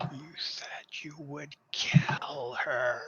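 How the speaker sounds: hissing, sibilant creature voice. A clawed creature points at a player's forehead and speaks, in a hissing voice. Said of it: "he says in a sort of hissing voice".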